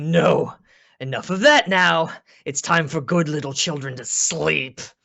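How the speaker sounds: loud, booming, bellowing monster roar. A game master voices the clawed creature confronting the players, bellowing. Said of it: "he he bellows like".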